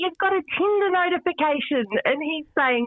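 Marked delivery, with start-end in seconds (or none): 0.0-1.8 put-on yelling, pitched very high. Retelling calling out about a phone notification: imitating own yell. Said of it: "And I yelled out to him".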